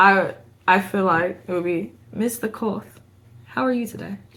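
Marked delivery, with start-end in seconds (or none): 2.1-4.2 soft, breathy, whispery English accent. Put on the spot to speak as a character: British accent. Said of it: "In the way you just said it, in the accent, British".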